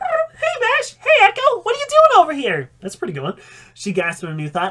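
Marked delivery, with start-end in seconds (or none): 0.0-2.7 put-on very high, loud, birdlike girl voice. Reading a story aloud, Stormblade greets Bash and Echo, in a bird girl voice. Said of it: "I gotta do a bird girl voice".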